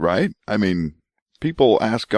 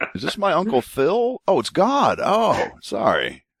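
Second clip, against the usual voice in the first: put-on confused voice, higher pitched; 8 semitones higher than usual. Imitating a confused Joe hearing a voice in the hat: imitating confused Joe. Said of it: "was Joe confused?".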